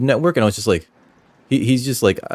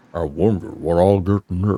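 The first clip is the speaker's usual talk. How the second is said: deep, lowered, dropped-down character voice; 4 semitones lower than usual. Redoing a character's line, giving him a deeper voice. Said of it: "I should give him a deeper voice".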